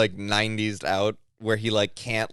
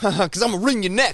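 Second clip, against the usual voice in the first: put-on tough voice, pitched much higher; 10 semitones higher than usual. Retelling how Charles came out and spoke: imitating Charles's tough voice. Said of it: "he put on like a tough voice to do it".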